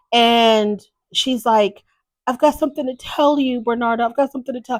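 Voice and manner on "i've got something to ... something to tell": mock weepy, tearful crying voice, pitched up. Retelling a woman's tearful phone call to Bernardo: imitating someone crying. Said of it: "She's crying".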